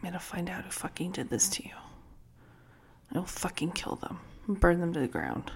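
very quiet mumble under the breath. Recalling what they said at a casket, retelling mumbling under breath. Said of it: "Like mumbling under my breath".

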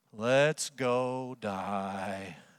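gloomy, mopey voice. Speaker acts out Thomas telling the others to go, Eeyore voice. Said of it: "You can hear his Eeyore voice".

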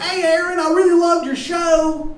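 very high, very loud, bad Baltimore accent. Retelling a guy praising Aaron's show, in a shitty Baltimore accent. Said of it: "This guy has like a shitty Baltimore accent".

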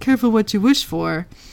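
taunting jab, full of mockery. Recounting a scene where one character answers others: retelling a mocking line. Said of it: "Wes says mockingly".

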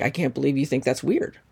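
normal talking voice

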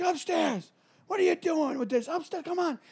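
put-on dad voice, very high, shrill scolding yell. Speaker retells his dad calling him upstairs in trouble, retelling dad's yell. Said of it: "And he's like yelling".

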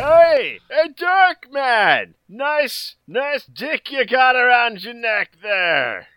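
put-on very high, slow, withered old man drawl. Game master voicing an old man calling to a player's character, old man voice. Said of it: "you see the withered husk of an old man. ... "Hey, bro!".

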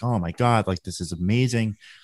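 ordinary delivery

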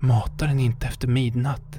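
whispering, quiet but audible. Recalling the old rules, with two terrified friends near, he whispered to himself. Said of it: "viskade han för sig själv".

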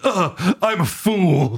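mock-despondent child voice. Describing an anime character hit from behind, imitating a despondent crying kid. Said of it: "In the most despondent go cry kid way".

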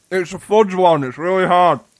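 speaking with mouth full. Reading a script with others, the speaker is talking while chewing. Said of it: "I'm eating a milk tray".

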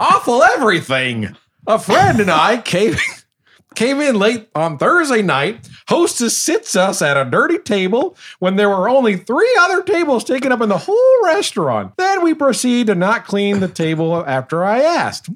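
very high, swooping, sing-song cartoon voice. Reading a bad restaurant review aloud: Marge Simpson voice. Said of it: "this will be my Marge Simpson".

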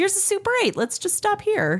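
weary mother voice. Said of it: "My mom would be like".

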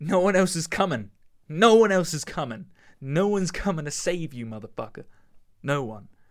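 hard-stressed, driving, forceful emphatic repetition. Urging listeners to stay positive and change their mindset: emphatic. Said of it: "I'm using the, the emphasis here".

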